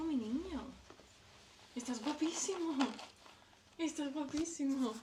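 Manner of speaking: high, soft, sweet, gushing, doting voice.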